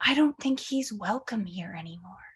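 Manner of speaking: hushed, whispered voice. In a roleplay, a character stands on her toes to whisper: whispering.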